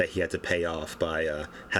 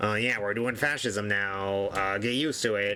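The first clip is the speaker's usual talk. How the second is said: put-on nasal nerdy voice, higher; 3 semitones higher than usual. Imitating Ron DeSantis as a boring president: imitating Ron DeSantis, nasal nerdy voice. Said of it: "Ron DeSantis in his, uh, really nasally, nerdy voice".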